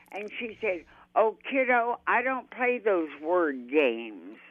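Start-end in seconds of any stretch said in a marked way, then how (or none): 1.1-4.2 put-on 1930s talking style, higher and louder. Retelling a conversation with a woman, talking like the 1930s. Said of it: "She always talked like the 30s".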